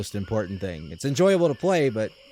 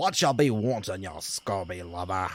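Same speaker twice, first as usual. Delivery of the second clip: put-on old-time pirate voice. The speaker playfully tries out a pirate impression, in a pirate voice. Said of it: "I like pirate voices".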